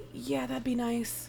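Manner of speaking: hushed, very soft, murmured. Voicing a boy answering a question: speaking really quietly. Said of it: "he says really quietly".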